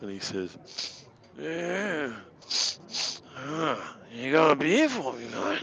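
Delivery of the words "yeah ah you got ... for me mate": put-on slow, sloppy, slurred drunk voice. Voicing a tavern patron woken by a tankard: drunk voice. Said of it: "talk in a drunk accent".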